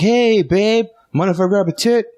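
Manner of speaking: very high-pitched, playful, jokey voice. Speaker acts out what he says to his significant other, retelling in a funny tone. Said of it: "it's always a funny tone".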